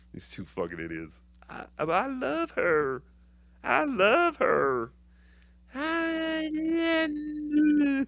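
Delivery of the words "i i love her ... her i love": put-on rambling voice, higher and quieter. Mocking a caller in a bit: Scarlett impression. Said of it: "that's my Scarlett impression".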